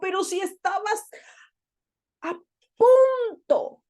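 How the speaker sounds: pleading, imploring tone.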